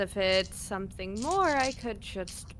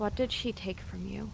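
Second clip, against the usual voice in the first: hushed, quiet, quick voice; 3 dB quieter than usual. Role-playing player's character asks another character a question; quiet voice. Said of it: "in a quiet voice".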